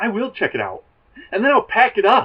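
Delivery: put-on pissed-off tone, high. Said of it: "Joey's all, all mad that".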